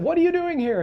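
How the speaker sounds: very high, startled voice.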